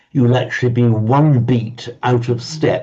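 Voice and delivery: ordinary delivery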